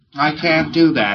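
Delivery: slow, put-on listless, apathetic flat voice. Retelling what a preclear said with his eyes closed: imitating an apathetic voice. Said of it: "he said in an apathetic voice".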